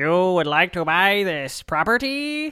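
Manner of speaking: robotic speech. Recalling an old handheld Monopoly game, quoting Rich Uncle Pennybags in a robot voice. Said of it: "it was sort of like a robot voice".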